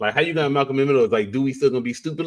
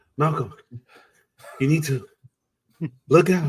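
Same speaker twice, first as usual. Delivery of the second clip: slow, deliberate, measured delivery; 3 semitones higher than usual. Imitating a character the other speaker sounded like: imitating a Malcolm in the Middle character. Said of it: "talking like that dude on, uh, uh, uh, Malcolm in the Middle".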